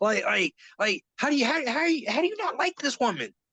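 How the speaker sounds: high, wide-ranging incredulous tone of disbelief.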